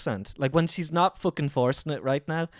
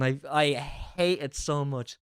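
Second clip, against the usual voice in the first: normal talking voice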